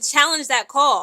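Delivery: put-on shouting. Retelling the team GM's demand to the coach: imitating someone yelling. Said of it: "was yelling at him".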